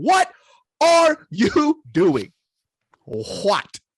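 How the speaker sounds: upset, shrill screaming, pitch swooping. Recounting watching a fight, the speaker re-enacts: retelling own screaming at TV. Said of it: "screaming at the T V".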